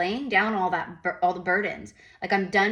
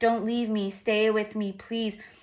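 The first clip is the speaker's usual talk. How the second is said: clingy, manipulative-sounding, pleading, begging voice; 3 semitones higher than usual. Acting out a partner who won't let go: imitating someone begging.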